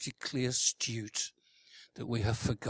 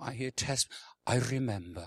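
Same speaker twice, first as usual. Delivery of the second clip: put-on Welsh accent; 3 dB quieter than usual. Asking listeners about their relationship with the Lord, slipping into a put-on Welsh accent. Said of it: "Don't know why I put a Welsh accent on".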